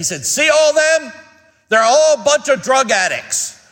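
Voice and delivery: loud speaking voice. Retelling what a man at church said about a row of men, retelling a loud remark. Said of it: "he very loudly said".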